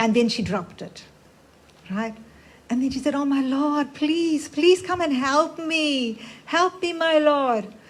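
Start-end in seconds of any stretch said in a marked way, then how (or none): 3.1-7.6 play-acted, high, desperate pleading cry. Retelling a story of an old lady calling on the Lord: acting out a desperate plea. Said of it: "she said that with so much of desperation".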